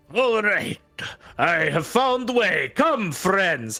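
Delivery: gruff, hulking warrior woman voice, pitched slightly high. A game master voices a newcomer calling to the party from behind, in a gruff voice. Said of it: "this gruff voice".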